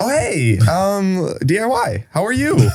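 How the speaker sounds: very high, swooping, drawn-out voice. Greeting a date in an acted first-date scene: voice three octaves higher. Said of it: "you hear his voice just get, like, three octaves higher".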